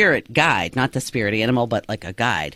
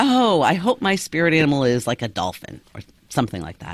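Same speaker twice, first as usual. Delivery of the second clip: playful, teasing, light, joking tone, acted. Speaker recounts her own earlier remark to two others, retelling her own joking remark. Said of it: "I say jokingly".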